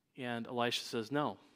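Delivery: plain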